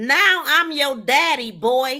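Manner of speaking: play-acted slow, loud, drawn-out domineering yell. Mocking an officer's words to a stopped driver: imitating a yell. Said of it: "Oh my God, I'm yelling".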